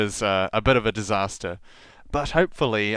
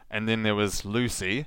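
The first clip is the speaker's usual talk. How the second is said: ordinary talk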